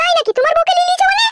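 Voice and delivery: high-pitched woman's voice.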